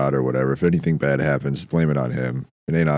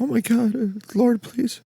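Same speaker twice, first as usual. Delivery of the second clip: mock screaming and crying, much higher and slower. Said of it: "She's like screaming and like crying".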